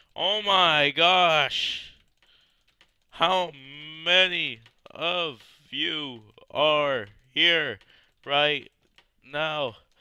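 very loud, very slow, high, drawn-out panicked shout. Surrounded by a swarm of zombies in a game: panicking. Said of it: "I'm panicking".

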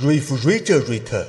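put-on low, slow British accent.

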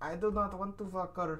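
put-on Indian accent. Retelling a scene from a parody film, Marty with Indian accent. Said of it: "this little Indian guy plays Marty".

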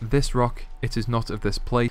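normal talking voice

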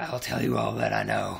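ordinary delivery

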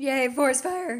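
voice breaking on a very loud cheer. Reacting to the forest fire being lit again, with a voice crack. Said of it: "that was a voice crack".

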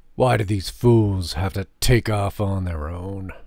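muttering. A soldier, following bloody footsteps with Thora, mutters. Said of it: "the soldier muttered".

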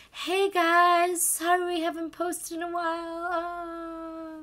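very slow, flat, high deflating-balloon voice. Mocking annoying YouTubers before an unboxing video, like a slowly deflating balloon. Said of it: "You said it like a balloon that was".

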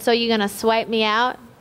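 ordinary talk

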